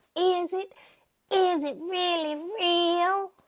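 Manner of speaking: very high, very slow, patronizing, drawn-out mocking tone. Retelling Dorit mocking Sutton, imitating Dorit's condescending mockery. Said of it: "in a conde- condescending tone mocking Sutton".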